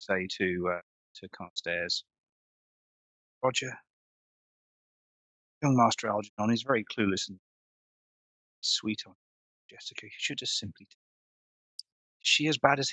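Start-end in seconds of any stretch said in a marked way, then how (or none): 3.4-12.9 stage whisper, quieter and faster. Mrs. Williams speaks to Carstairs so the crowd can overhear, in a stage whisper. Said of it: "in almost a stage whisper so people can hear".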